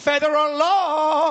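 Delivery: shrill, very high yell with law stretched out. Retelling an argument with a bar owner over a dog: imitating himself yelling. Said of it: "I'm literally yelling at the bar".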